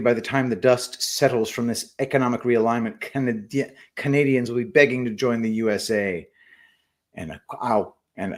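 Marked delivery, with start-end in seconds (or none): none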